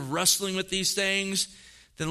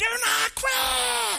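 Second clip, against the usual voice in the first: very high, raspy preacher's scream, stretched out. Retelling a pastor at a pastors' conference: imitating Jack Riles screaming.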